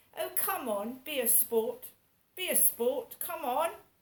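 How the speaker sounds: put-on upper-class posh accent. Repeating a phrase to show how it sounds, in a posh voice. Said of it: "Doesn't that sound like a posh person?".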